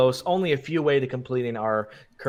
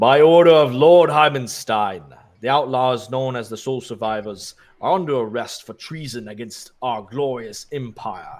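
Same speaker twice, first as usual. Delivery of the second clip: loud bellowing minotaur voice; 6 dB louder than usual. A game master voices a minotaur knight arresting the outlaws, bellowing minotaur voice. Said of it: "the Minotaur bellows".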